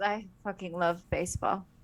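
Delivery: quiet mutter, half to oneself. Retelling what she said at a baseball game, muttered under her breath. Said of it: "like just under her breath".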